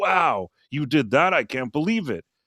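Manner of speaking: acted eager, delighted, thrilled disbelief. Retelling a story, the speaker acts out a man hearing the details, mimicking an excited guy. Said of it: "he seems so excited".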